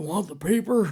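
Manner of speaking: put-on high old man voice. Retelling own school-play performance as Brooks: imitating own acting as old Brooks. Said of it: "I'm sitting there acting Brooks going".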